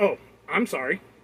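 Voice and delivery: mock sarcastic tone, put-on. Retelling the woman's reply to his repeated request, in a mock-sarcastic apology.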